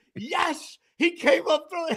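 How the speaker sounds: high-pitched screaming. Recounting a throw to him at first base, retelling a scream. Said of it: "I'm screaming".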